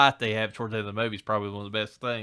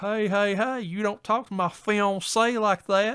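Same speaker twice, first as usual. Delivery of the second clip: put-on very high, slow, drawling Southern accent; 11 semitones higher, 4 dB louder than usual. Retelling a movie scene where a character interrupts a fight: put-on Southern accent. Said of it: "real put-on Southern accent".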